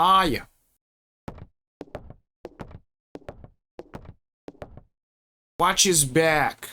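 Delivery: acted, put-on New York accent. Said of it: "Gotta speak with the New York accent".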